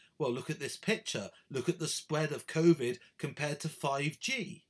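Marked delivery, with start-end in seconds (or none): none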